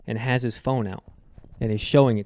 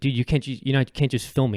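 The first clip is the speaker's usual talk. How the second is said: mock-aggressive outburst; 3 semitones higher than usual. Retelling confronting a man who held his phone up to film, retelling an aggressive outburst. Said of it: "I started getting aggressive with him".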